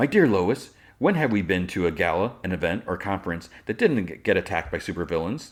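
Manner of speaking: ordinary talk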